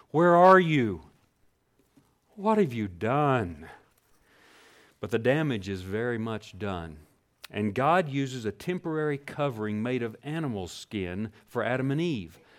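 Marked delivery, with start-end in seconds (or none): 0.1-3.6 put-on, loud, drawn-out, pained calling out. Retelling Genesis, the speaker voices God calling out to Adam and Eve: acting out a pained call. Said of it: "you might can hear the pain in his voice".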